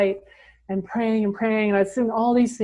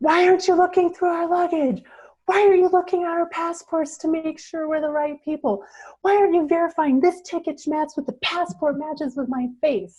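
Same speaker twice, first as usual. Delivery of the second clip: mock furious yelling, high and ballistic; 7 semitones higher than usual. Recounting panic at the Kathmandu airport, the speaker retells yelling at staff. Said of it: "I'm like yelling at everyone who works there".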